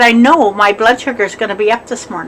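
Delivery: ordinary talk, nothing marked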